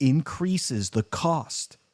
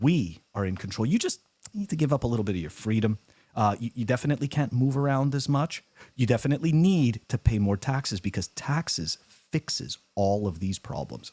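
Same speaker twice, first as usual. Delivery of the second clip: ordinary talk, nothing marked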